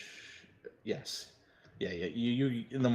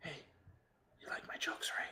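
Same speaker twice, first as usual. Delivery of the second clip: soft whisper, close to the ear; 5 semitones higher, 11 dB quieter than usual. Voicing a princess waking a player at night: whispering princess. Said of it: "And you hear a whisper".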